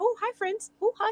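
very high, squeaky, tiny little voice. The speaker voices Vern greeting the group of companions: squeaky Vern voice. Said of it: "but just squeaking".

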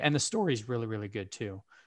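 voice cracking and breaking mid-phrase. Praising a game's story to another speaker: voice cracking. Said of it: "as my voice cracks".

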